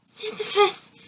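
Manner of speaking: high-pitched, quivering, trembling whisper. Scared of a spider on her nose, she calls her sleeping cat: trembling whisper. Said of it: "she whispered in a trembling voice".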